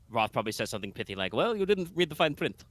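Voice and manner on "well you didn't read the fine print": put-on hint of Transylvanian accent, pitched up. Voicing Roth replying to a player: slight Transylvanian accent. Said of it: "a little Transylvania on the accent".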